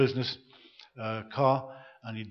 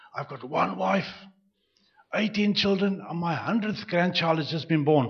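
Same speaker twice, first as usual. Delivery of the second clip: put-on rasping, hoarse old man's voice; 3 semitones higher than usual. Telling a story where an old grandfather stands up to speak, in a hoarse voice. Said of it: "the hoarse voice".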